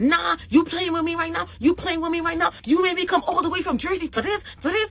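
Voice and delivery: high, loud screaming. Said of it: "he starts, like, screaming".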